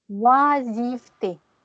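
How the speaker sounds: "oisiveté" stretched very slowly, syllable by syllable.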